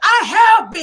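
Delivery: full-force, very loud, high-pitched yell. Retelling an argument, quoting Martell: imitating Martell yelling. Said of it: "He's yelling like that, guys".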